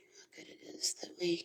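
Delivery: very soft, hushed whisper under the breath.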